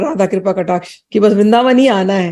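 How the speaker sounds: ordinary delivery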